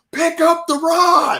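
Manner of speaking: mock piercing, very high-pitched scream. Retelling screaming at a man making a video to pick up the rod, retelling a scream. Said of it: "I'm screaming".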